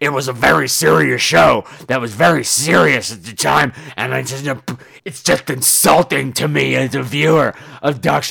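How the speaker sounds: loud, growly bulldog woman's voice.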